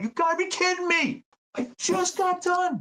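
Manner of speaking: put-on very high-pitched, shrill screaming. Retelling how they screamed at their speaker, reenacting own screaming. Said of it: "I was really screaming at my speaker".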